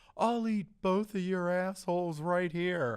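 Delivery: light, held-back mock holler. Retelling what a man in an alley screamed at passing girls: imitating a scream at full volume. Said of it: "he screamed at the top of his lungs".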